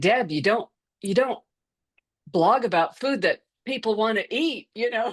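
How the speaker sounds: put-on Southern American accent. Quoting an accountability partner: Southern accent. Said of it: "She has this great Southern accent".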